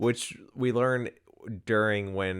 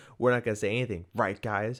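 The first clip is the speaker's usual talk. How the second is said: ordinary talk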